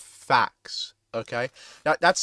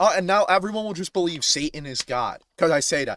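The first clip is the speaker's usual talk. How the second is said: plain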